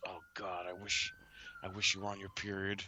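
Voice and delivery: hushed, soft, half-whispered stage whisper. Retelling what he said on the phone, imitating someone half-whispering. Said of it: "He's whispering".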